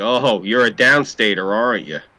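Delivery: put-on hostile, angry local voice, jabbing. Speaker acts out upstate locals confronting a downstater, mock-angry upstate local. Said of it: "they get angry".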